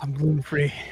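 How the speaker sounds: overly gravelly, rough voice. Joking right after "the cowl goes up": too gravelly voice. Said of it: "Your voice is too grovelly".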